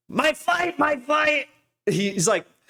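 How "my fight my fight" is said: slow, stretched, shrill, very high voice. Mimicking how a rabbi talks about his flight: Shmuley Boteach impression. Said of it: "this is how he talks".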